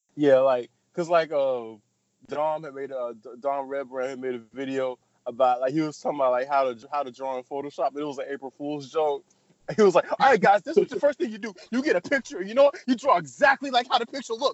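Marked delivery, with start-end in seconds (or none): 10.1-14.5 mock angry, mad, high-pitched screaming. Retelling an April Fool's drawing tutorial video: imitating Dom Redbrand screaming mad. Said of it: "screaming the whole time".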